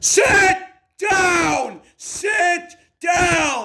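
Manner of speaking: very high, drawn-out, loud yelling. Ordering a debater who keeps talking to stop: yelling at someone. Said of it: "Please stop yelling".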